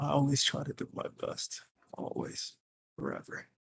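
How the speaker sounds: very quiet whispered mutter under the breath. Speaking in character during the group's talk, muttered under breath. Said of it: "Under my breath".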